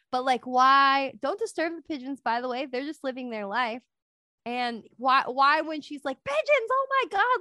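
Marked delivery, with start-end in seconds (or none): 6.2-7.4 very high, shrill, fear-struck scream. Recounting what a woman said when she saw pigeons, imitating a fearful scream. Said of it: "like with fear in her eyes".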